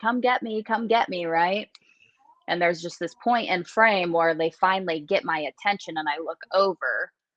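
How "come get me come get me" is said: acted desperate scream, kept small and held down. Retelling being lost in the head: imitating own screaming. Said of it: "I was screaming".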